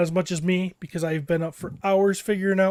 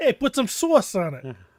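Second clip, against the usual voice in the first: put-on New York accent, slower; 2 semitones higher than usual. Told a word sounds like New York, the speaker plays it up: New York accent. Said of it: "That sounds like you're from New York".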